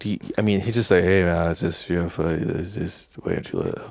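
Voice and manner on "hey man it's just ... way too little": mock-sleepy, flat, drowsy monotone delivery. Describing guys who barely woke up for a scene, imitating their sleepy monotone. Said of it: "These guys are so sleepy monotone".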